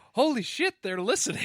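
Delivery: astonished, very high and loud exclamation. Re-enacting own earlier words about listeners: imitating own surprised voice. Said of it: "I said that with surprise in my voice".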